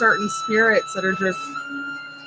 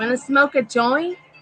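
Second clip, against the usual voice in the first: put-on Boston accent; 6 semitones higher, 4 dB louder than usual. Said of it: "her best Bostonian accent".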